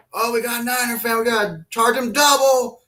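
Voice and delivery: play-acted, loud, high-pitched hollering. Retelling a worker calling out about a Niner fan: imitating someone yelling. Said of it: "one of the workers there starts yelling".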